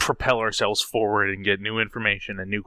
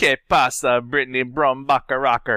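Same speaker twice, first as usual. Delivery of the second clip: Spanish in put-on Jamaican accent, higher; 3 semitones higher, 5 dB louder than usual. A podcast guest greets the host: spanish with a jamaican accent. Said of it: "it was Spanish, but with a Jamaican accent".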